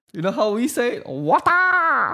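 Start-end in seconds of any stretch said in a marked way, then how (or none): 1.0-2.1 high, barked kung-fu movie fighting shout. Jokingly showing how the word is said back home: Bruce Lee-style shout. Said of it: "Bruce Lee?".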